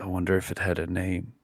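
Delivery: quiet, mumbled mutter under the breath. Voicing a character wondering aloud: muttering quietly under his breath. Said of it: "just very much under his breath".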